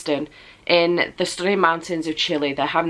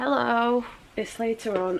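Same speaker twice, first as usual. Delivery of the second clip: soft, worn-out, weary, tired voice; 5 semitones higher, 6 dB quieter than usual. Coming back later to give an update as promised, in a tired voice. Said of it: "I sound so tired".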